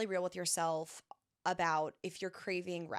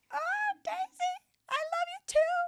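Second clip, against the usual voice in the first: very high-pitched, loud, giddy gushing; 6 dB louder than usual. Creator answering a follower's kind message, high-pitched voice. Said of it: "I'm talking in a high pitched voice".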